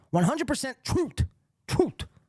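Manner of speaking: odd speech quirk, words squeaked out very high. Quoting how someone says truth: Bob Levy impression. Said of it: "I don't know why he actually talks like that".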